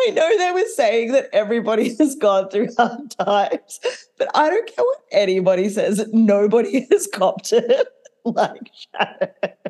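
high-pitched, laughing through the words.

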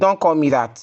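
ordinary talk, nothing marked

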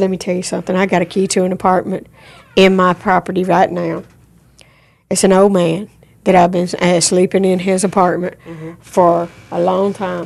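plain

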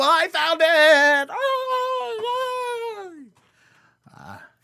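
excited, very high, swooping, drawn-out "oh". Podcast host announcing he found a lost SD card, excited Kermit the Frog voice. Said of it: "That was my impression of Kermit the Frog being excited".

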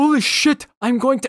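high, loud, stunned outburst, blurted out. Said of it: "when he's like".

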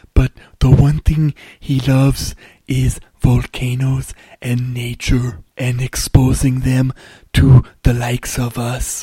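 put-on German-accented voice. Describing a filmmaker's volcano documentary in his voice: Werner Herzog impression. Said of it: "He kinda talks like this".

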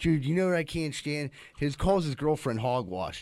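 ordinary talk, nothing marked

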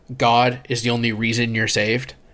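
ordinary talk

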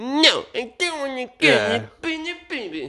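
put-on very high, sulky, bratty teen voice. Mocking young Anakin as a loud, moody brat: bratty Anakin impression. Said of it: "He's, like, a brat".

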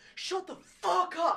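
put-on rowdy kid yell, very high, very loud, shrill. Describing the kids at their table, retelling a loud yell. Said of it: "As loud as they possibly could".

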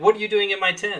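acted woman's scream, high and loud. Retelling a tv plot where a character yells at an intruder: imitating a woman screaming. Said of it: "Margaret is screaming".

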